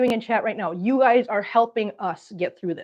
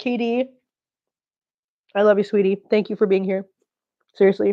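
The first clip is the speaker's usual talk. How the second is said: choked-up, weepy, crying through the words; 2 semitones lower than usual. Addressing someone directly, crying while talking. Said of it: "I'm gonna stop crying".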